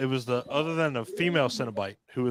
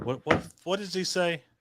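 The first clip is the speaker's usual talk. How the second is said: normal talking voice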